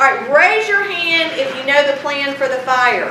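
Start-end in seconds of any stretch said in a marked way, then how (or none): none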